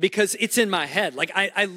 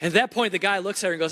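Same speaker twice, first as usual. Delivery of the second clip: ordinary talk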